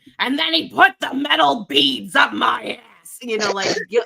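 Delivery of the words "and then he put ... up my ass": loud, creaky, raspy, slow, drawn-out comic voice. Retelling a comedy sketch line: Gilbert Gottfried impression. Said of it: "Gilbert Gottfried was".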